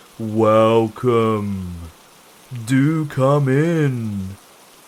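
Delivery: very slow, deep, rumbling voice. Narrator reads the figure in the doorway welcoming the visitors: deep, rumbling voice. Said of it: "said the figure in a deep, rumbling voice".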